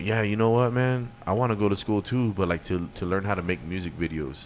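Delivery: ordinary talk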